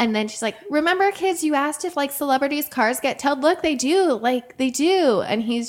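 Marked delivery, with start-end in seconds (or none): 0.7-5.2 put-on high-pitched yelling. Retelling how a woman yelled at her kids near a celebrity: imitating a woman yelling. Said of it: "yelling at her kids".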